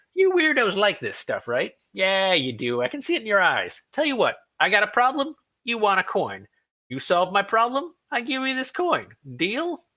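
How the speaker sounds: sudden, high, bright, sunny, cheerful voice. Game master plays a brownie raising a coin to the players, bright and cheerful. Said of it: "what you think might be a brownie is standing right in front of you, / The brownie narrows his eyes up at you. We don't serve your kind here. The brownie shifts from menacing to bright and cheerful in".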